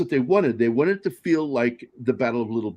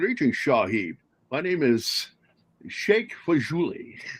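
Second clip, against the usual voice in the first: put-on Scottish accent, sahib slurred into shahib; 3 dB quieter than usual. Retelling a joke from their own writing: Sean Connery impression. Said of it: "the Sean Connery joke that I wrote".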